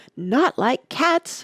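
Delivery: piercing, shrill, impassioned, passionate outburst. Narrator reading a story, the Mouse answering Alice's apology, in a shrill, passionate voice. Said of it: "cried the Mouse in a shrill, passionate voice".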